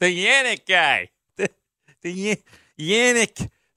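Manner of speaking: imitated Chicago accent. Repeating what another man said, switching into a Chicago accent. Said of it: "from the Pittsburgh accent to the Chicago accent".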